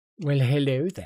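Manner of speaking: put-on sinister tone. Greeting viewers at the start of a video, put-on sinister tone. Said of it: "I don't know why that was needed sinisterness".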